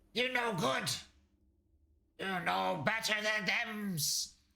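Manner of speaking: high, broken, yelling kobold voice. A second kobold shouts at the traitor Doopa, kobold shouting. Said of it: "another kobold shouting".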